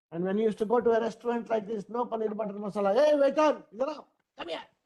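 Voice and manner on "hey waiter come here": put-on hot-tempered old man's voice. Telling how his hot-tempered father acted in restaurants, the speaker acts him out, mock-angry, as C N Chari. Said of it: "was a hot-tempered, angry young man".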